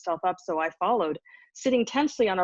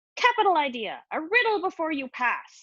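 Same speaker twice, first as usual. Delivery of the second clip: high voice with a cackle running through; 9 semitones higher than usual. Narrator voicing a mysterious voice demanding a riddle, cackling voice. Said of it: "the voice continued with a cackle".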